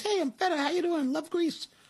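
very high-pitched talking-cheese mascot voice. Describing feta crumbles in a plastic container, speaker gives it a voice: voice of feta cheese. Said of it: "That's its voice?".

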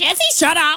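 bird-like parrot voice. Asked by the co-host for an animal voice, speaker answers in a parrot voice. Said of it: "do a parrot voice".

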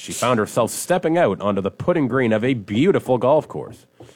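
ordinary delivery

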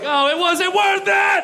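high, loud, slow, panicked wailing cry.

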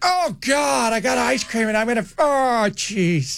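breathy put-on actress voice. Acting out someone getting ice cream, in a Jennifer Coolidge voice. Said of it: "I sounded like, uh, what's her name?".

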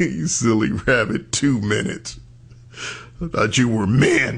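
mock chuckling. Retelling how a caller responded; imitating someone chuckling. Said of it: "The way she chuckled like".

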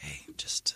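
put-on whisper. Retelling how they talk to the dog closest on the couch: imitating own whisper. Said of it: "I'll just whisper".

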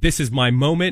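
normal talking voice

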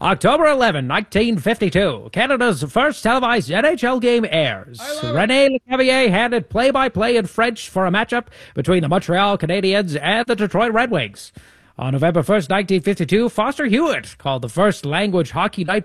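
put-on old-fashioned radio broadcaster voice. Host agrees to read the next hockey history bit in the old-timey radio voice. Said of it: "do you want me to do the next bit in the old-timey radio voice".

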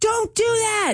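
high-pitched mock yelling.

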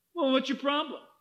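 imitated sarcastic tone. Retelling questioning a young man about his sin: imitating own sarcastic tone. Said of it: "I was really sarcastic with him".

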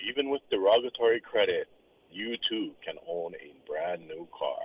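low, completely straight, deadpan voice. Imagining Kenny Mayne selling used cars, deadpan Kenny Mayne impression. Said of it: "The deadpan".

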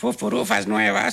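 high, slow put-on parrot voice.

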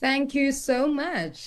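happy and rejuvenated. Guest thanks the host for the welcome on the podcast: happy and rejuvenated. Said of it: "you sound so happy, rejuvenated".

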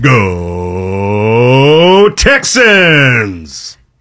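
put-on old-time radio announcer voice. Asked for a team cheer, he tries his old radio announcer voice. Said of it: "Let me see if I can get my old radio voice".

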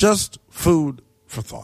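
slow, deliberate, knowing, drawn-out delivery.

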